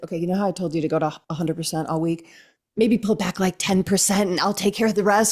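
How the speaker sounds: put-on whisper. Retelling what was whispered to her while walking over: retelling a whisper. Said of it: "I whispered to her".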